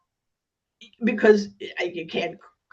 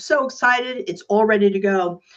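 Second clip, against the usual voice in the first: ordinary talk, nothing marked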